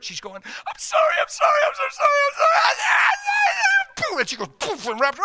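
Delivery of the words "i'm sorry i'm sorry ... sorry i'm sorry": very high, very slow, drawn-out sobbing wail. Telling a story, speaker repeats a woman's apology, imitating someone crying hard. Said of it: "she was crying so hard".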